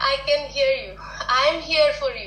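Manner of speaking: ordinary talk, nothing marked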